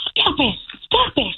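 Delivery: high, drawn-out, roaring scolding shout. Telling how a woman shouted at the speaker's child, retelling a woman shouting. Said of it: "the woman was shouting and roaring and being like".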